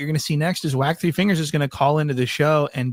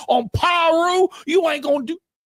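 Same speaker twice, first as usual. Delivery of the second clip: put-on very high-pitched, long stretched-out screaming. Showing how someone usually sounds with everyone else: imitating Whack Three Fingers screaming. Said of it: "screaming at the top of his lungs".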